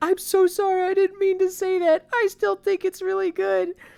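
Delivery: put-on near-crying voice. Retelling what she said to the first kid, imitating someone near tears. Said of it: "she's on the verge of crying".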